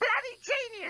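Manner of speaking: very high, squawking, screeching parrot scream. Narrating a story, the parrot screams over the intercom: parrot screaming. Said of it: "Screamed the parrot over the intercom".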